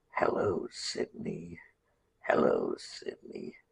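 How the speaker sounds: very low, slow, rough, creaky, drawn-out rasp. Showing how to do the Ghostface voice from Scream, raspy drawn-out Ghostface voice. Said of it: "you have to do raspy there and very low and draw it out".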